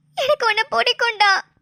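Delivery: ordinary delivery, nothing marked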